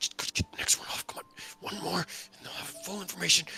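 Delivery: breathy, whispered, under-the-breath mumbling. A game master voicing a fidgeting man, muttering to himself. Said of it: "he's like muttering to himself".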